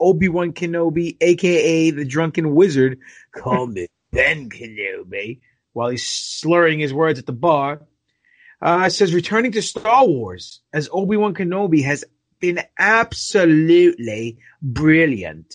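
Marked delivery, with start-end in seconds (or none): 9.1-15.6 really bad, shoddy put-on British accent. Reporting what Ewan McGregor says about returning to Star Wars, in a really shitty British accent. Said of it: "was a really shitty British accent".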